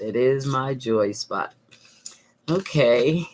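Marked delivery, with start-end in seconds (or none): 0.0-1.5 soft delivery with stress on "is".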